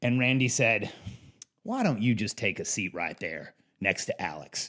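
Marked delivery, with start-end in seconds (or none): 1.6-4.7 low, soft, put-on Southern accent. Retelling a skit and product presentation, the speaker quotes Randy, imitating Randy's Southern accent. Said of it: "I'm doing my best Southern accent".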